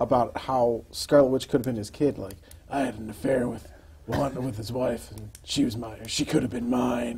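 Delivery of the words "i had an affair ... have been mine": hushed, soft, dramatic action-hero monologue voice. Quoting Wolverine's comic-book monologue, in action hero voice as Wolverine. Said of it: "reading it in Action Hero voice".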